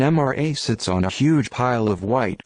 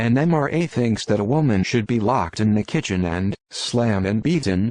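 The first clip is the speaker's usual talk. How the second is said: normal talking voice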